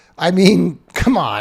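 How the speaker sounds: speaking while stifling a laugh. Commenting on a new mask rule, holding back laughter. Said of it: "I'm trying not to laugh".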